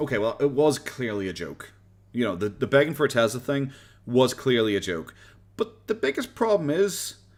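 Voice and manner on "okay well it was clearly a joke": ordinary talk, nothing marked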